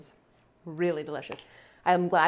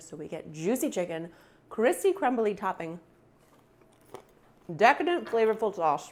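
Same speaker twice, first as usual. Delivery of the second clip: speaking with mouth full, chewing, higher pitch; 4 semitones higher than usual. Summing up a chicken dish while eating it, talking with mouth full. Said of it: "Talking with our mouth full".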